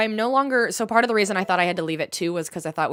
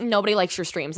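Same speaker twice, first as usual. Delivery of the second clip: ordinary delivery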